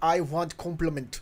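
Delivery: put-on German accent with mock personality voice. Describing the Mazoku's personality by acting it: put-on German personality voice. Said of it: "this one is more like".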